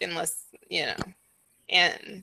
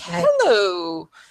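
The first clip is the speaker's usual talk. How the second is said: cheerful shopkeeper voice, louder; 6 dB louder than usual. Voicing a shopkeeper greeting customers: very happy shopkeeper. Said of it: "He is very happy to see some customers".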